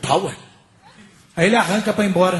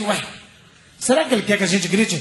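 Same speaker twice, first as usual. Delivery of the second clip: ordinary talk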